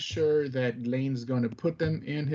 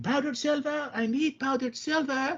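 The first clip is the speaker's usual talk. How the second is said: very high scream, in character; 13 semitones higher than usual. Playing a character hunting for an ingredient: screaming in character. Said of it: "I'm just gonna be screaming".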